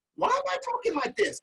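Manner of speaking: odd voice, pitch jumping way up.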